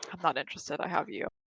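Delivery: very quiet, hushed, under the breath. Half-turning to a companion while preparing to leave, very quiet. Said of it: "and just very quietly go".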